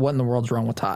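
ordinary talk, nothing marked

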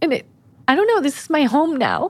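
high, tearful voice, crying through the words. On a podcast, speaking of the village that is now home: crying. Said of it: "And now I'm crying".

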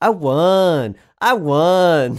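put-on very loud, slow gloating child voice, won drawn out. Retelling how a son rubs a win in his mom's face: imitating a child gloating. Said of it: "get in her face and go".

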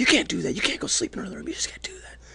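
mock breathy whisper standing in for screaming. Retelling waking a partner at seven thirty: imitating someone screaming.

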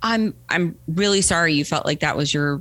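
plain

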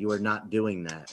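firm, very stern, flat, no-argument tone. Retelling how Sharon warned about buying expensive figures: imitating a stern warning. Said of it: "very sternly said".

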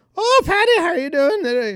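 very high, loud put-on Irish brogue accent. Joking about naming a kid patty, greeting him in an irish accent. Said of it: "force the kid to have an Irish accent".

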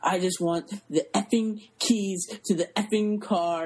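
raw, unfiltered, furious angry outburst. Retelling a movie scene where he goes off on guest services: imitating an angry rant. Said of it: "he just goes off on her".

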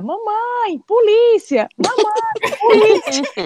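very high, very slow, drawn-out squawking parrot screech. Retelling a parrot warning about police: imitating a parrot screaming. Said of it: "o papagaio começou a gritar".

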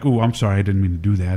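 put-on bashful, joking tone. Speaker recalling taking a hand off her knee, retelling a joking apology. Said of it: "jokingly put my hand on her knee and then I take it off like".

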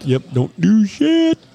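mocking, drawn-out, high, slow sarcastic drawl.

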